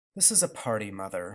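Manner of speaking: with a sigh. Father answers Grandmother's sharp remark at the Christmas party, with a sigh. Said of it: "said Father with a sigh".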